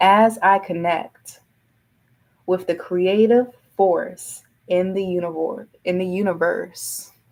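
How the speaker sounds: deliberate, slow, drawn-out reading aloud. Reading an affirmation aloud for listeners to write down: reading it slow. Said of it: "I'm gonna read it slow".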